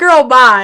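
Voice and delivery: put-on, loud, rude, dismissive tone. Showing how they say goodbye themselves: imitating own rude way of saying it. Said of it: "I say it rude".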